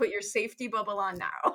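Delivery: ordinary delivery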